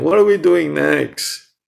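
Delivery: put-on high, loud, whiny, tired little girl voice.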